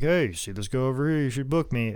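usual speaking voice

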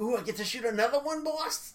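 very high, eager, excited gangster henchman voice. Retelling a gangster's line from a scene: imitating an excited gangster. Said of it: "I like how excited he gets".

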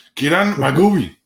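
put-on angry voice. Asked what she's drinking, saying the Japanese beer name like she's angry. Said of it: "you just say it like you're angry".

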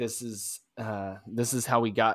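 ordinary talk

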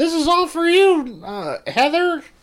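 put-on very high, loud evil-kid yell. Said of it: "you just yell out".

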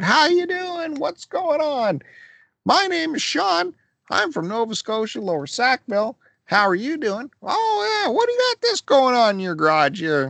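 mock high-pitched, swooping, hyper excited shouting. Retelling how a friend greeted people at yard sales: imitating someone screaming hello. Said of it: "screaming hello to the people".

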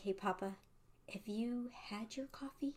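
hushed, barely-there, very soft, quiet voice. Retelling a phone call, the speaker quotes her asking Papa something, imitating her talking softly. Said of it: "she was like talking really softly".

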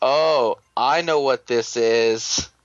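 very slow, knowing, assured drawl. Retelling what he said while watching a japanese program with the speaker, mock-knowing tone. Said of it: "very knowingly".

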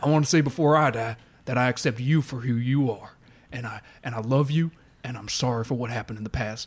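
deep character voice dropped down low. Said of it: "like I do a deeper voice now".

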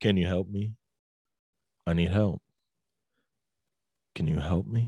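very low, flat monotone. Imitating how a man kept repeating his request: flat monotone voice. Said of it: "But it's like very monotone".

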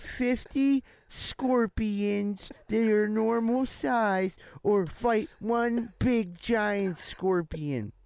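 put-on childlike reading voice. Reading a question aloud on the show, like a seven-year-old. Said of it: "I read it like a fucking 7-year-old".

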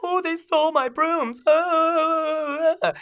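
shrill, very high, very slow, dragged-out, panicked wail. Retelling how the shop owner freaked out: imitating a freaking-out shopkeeper. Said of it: "he starts freaking out".

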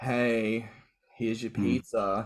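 unimpressed, flat, deadpan monotone. Acting out a pizza delivery boy character: deadpan, unimpressed delivery. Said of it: "in like the really deadpan, like unimpressed actor way".

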